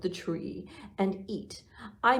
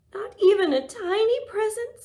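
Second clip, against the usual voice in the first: very high, loud squeak; 14 semitones higher, 7 dB louder than usual. Reading a story aloud, voicing Mouse found in the closet: squeaky Mouse voice. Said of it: "squeaked Mouse".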